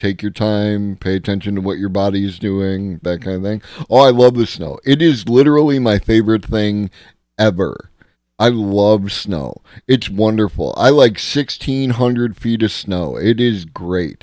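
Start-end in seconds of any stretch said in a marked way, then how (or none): 3.9-14.2 sarcastic, fake gushing delight, dripping sarcasm. Talking about snow after shoveling safety tips: sarcastic fake enthusiasm. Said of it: "This is all sarcasm".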